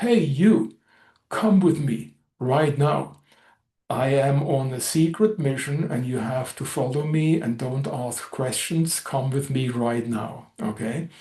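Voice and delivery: peremptory, demanding, commanding voice. Retelling a fake captain ordering a soldier: imitating a demanding tone. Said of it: "in a very demanding tone".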